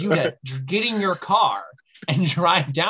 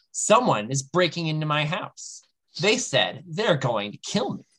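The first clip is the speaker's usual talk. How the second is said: normal talking voice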